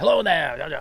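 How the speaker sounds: put-on old Maine accent. Describing a talking aquarium animal, Hoover's old Mainer accent. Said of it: "He sounds like an old Mainer saying".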